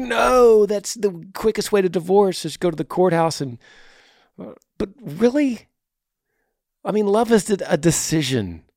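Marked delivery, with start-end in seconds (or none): 0.0-3.4 put-on insistent screaming outburst. Imitating podcast listeners objecting to a courthouse wedding: imitating listeners screaming. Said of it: "just screaming at me like".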